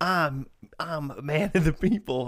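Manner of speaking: bad put-on Southern accent, slow drawl. Mocking an actor's speech in a show: Ashton Kutcher's terrible Southern accent. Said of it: "Ashton Kutcher with a terrible Southern accent".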